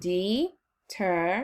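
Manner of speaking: slow, syllable-by-syllable pronunciation. Showing a learner how to say the word: said slowly. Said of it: "Say it slowly with me".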